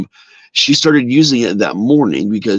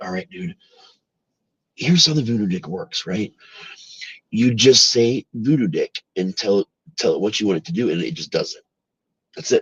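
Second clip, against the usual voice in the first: very low, hushed voice; 7 dB quieter than usual. Retelling what a guy told him in a side room, imitating a guy's low voice. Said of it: "He's giving his voice real low".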